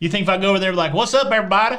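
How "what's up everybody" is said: fake Southern American accent, higher and louder. Pretending to greet people on arrival in the UK: put-on Southern accent. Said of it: "it's an amalgam of the South".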